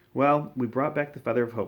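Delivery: ordinary delivery, nothing marked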